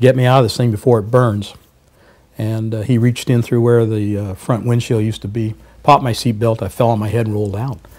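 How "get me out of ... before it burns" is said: plain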